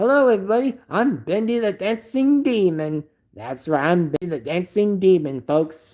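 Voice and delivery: put-on cartoon demon character voice. Showing viewers the voice done for Bendy the Dancing Demon. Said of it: "I do a very good impression of Bendy".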